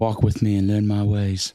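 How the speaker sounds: put-on British accent in a teacher voice. Joking that Jesus taught apprentices, a speaker answers in a British-accented Jesus voice. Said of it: "So you had a British accent".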